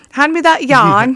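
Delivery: put-on British accent. Retelling own words while helping a niece tie a quilt: put-on british accent. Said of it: "talk with a Briti-, British accent".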